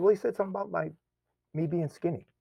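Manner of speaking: choked-up voice, near tears. Retelling what they told their mom about a kid: imitating own choked-up voice. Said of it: "And then I got choked up".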